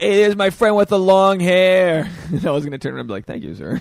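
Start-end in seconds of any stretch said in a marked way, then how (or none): 0.0-2.1 loud, high-pitched hollered call-out. Acting out a man among drunks yelling at the speaker, retelling a yell. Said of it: "He yells at me".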